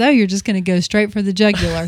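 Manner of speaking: normal talking voice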